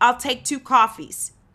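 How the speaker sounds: loud, straight-to-the-point New York accent. Explaining how to learn an American accent, acting out a New Yorker ordering: New York accent. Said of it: "a New Yorker will just go in and say".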